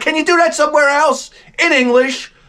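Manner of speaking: high-pitched shouted yell, acted out. Retelling a story of yelling at a woman, retelling a yell. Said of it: "I start yelling at her".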